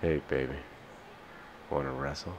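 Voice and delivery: hushed, breathy, seductive whispered voice. Taking a turn on the mic after a friend, the speaker shows off: sexiest voice. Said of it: "Here's my sexiest voice".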